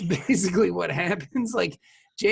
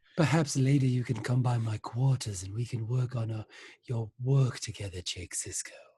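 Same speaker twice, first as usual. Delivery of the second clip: very low, creepy stage half-whisper; 7 semitones lower, 5 dB quieter than usual. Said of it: "That's her voice to me".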